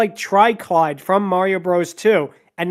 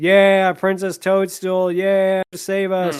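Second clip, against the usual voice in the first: mock deadpan voice, flat, monotone, no life at all. Replicating how bad voice actors sound: imitating flat voice acting. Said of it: "they sound so flat. Here is a direct replica of how they sound like".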